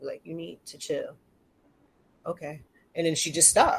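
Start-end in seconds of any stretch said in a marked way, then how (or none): 0.2-2.6 whispered very low and very quiet. Retelling what the speaker whispered to her again, in a low whisper. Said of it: "And I whisper real low".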